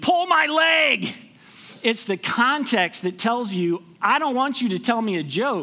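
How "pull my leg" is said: high-pitched, loud cry of pain. Explaining context with an example of a leg cramp, yelling in pain. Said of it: "I yell at you".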